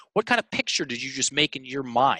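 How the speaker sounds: plain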